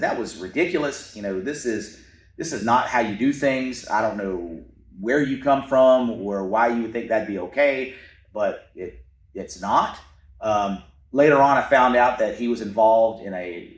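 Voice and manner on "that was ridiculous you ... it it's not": ordinary talk, nothing marked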